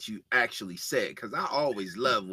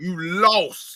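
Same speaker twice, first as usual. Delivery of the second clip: very loud, high, put-on country voice; 9 semitones higher, 10 dB louder than usual. Repeating own quote to a co-host: LaVar Ball voice. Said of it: "trying to sound like the Ball Daddy".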